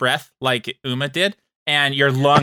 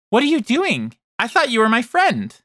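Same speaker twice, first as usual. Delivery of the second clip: high-pitched creature voice with swooping, swinging pitch; 9 semitones higher than usual. Game master voicing a restrained creature to a player: Ellie's voice through creature. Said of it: "from this creature's voice".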